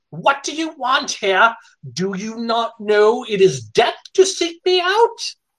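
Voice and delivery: very high-pitched, hateful snarl. A narrator voices a hateful spectral woman, snarling. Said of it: "she snarls".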